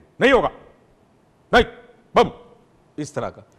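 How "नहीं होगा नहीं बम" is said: curt, sharp, angry, aggressive tone. Describing people who refuse aggressively, doing a mock-aggressive sharp refusal. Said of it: "दूसरी aggressive किस्म की".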